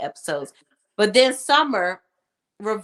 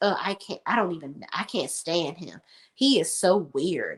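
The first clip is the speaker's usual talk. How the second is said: acted, huffy, exasperated and dismissive, full of attitude; 2 semitones lower than usual. Retelling how a woman came into the house, imitating her attitude. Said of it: "she comes in the house with an attitude".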